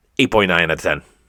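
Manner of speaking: rushed blurt. Giving a toy figure its score out of ten: said very fast. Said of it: "I said it so fast".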